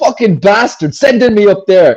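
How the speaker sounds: furious, fed-up screaming outburst. Retelling how dad screams at the sat nav: imitating dad screaming. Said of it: "he's screaming".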